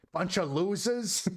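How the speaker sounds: high put-on New York accent. Reading a line aloud to Claire, in a New York accent. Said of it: "read that in like a, a New York accent".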